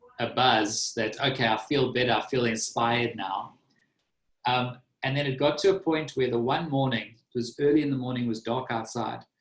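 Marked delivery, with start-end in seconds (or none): none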